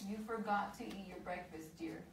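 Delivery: plain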